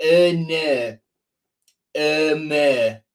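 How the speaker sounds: strong, heavy Hull accent. Showing how the player's name sounds: strong Hull accent. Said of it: "in a really strong Hull accent".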